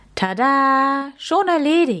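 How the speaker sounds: proud, triumphant, high, drawn-out "tada". Max shows the Krawuschel the wood splinter, proudly. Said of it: "Max zeigte ihm stolz".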